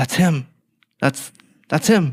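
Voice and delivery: put-on whisper. Retelling how a fan whispered on seeing Neil: imitating Mark Turpin whispering. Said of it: "he started whispering into my ear".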